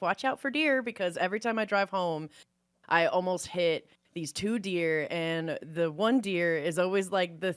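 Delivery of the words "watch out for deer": very high-pitched, heavy, thick Wisconsin accent. Explaining a Halloween outfit idea, in a very Wisconsin accent. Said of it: "a very Wisconsin accent of".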